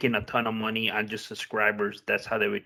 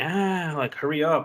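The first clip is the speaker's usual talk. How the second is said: mock pushy child yelling, high and drawn out; 6 semitones higher than usual. Retelling how the son yells at commercials: imitating a child yelling. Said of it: "pushing and yelling".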